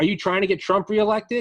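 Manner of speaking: loud, high-pitched hollering yell. Retelling a shop owner yelling at protesters: imitating someone yelling. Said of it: "he's yelling at the protesters".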